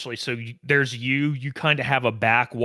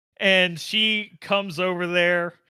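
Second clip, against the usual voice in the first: normal talking voice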